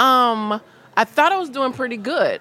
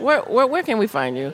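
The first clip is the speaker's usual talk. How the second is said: ordinary delivery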